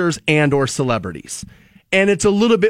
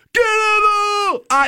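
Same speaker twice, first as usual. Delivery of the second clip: very high, shrill, screeching scream. Telling another speaker who they would hate, acting out a scream. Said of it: "and he screamed".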